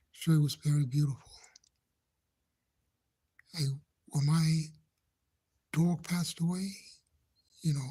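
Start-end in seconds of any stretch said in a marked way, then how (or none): none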